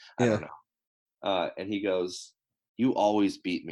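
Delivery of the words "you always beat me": put-on mumble, muttered under the breath. Retelling what an opponent mutters loud enough to be heard, retelling a mumble under breath. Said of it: "He just like mumbles it under his breath".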